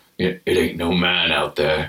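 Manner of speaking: very slow, very high, drawn-out, offhand, nonchalant delivery. Talking about a film's characters, imitating Billy's nonchalant delivery. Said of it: "He just says it like so nonchalantly".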